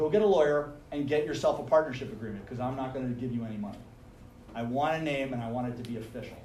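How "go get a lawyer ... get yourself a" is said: ordinary delivery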